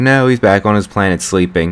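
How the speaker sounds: plain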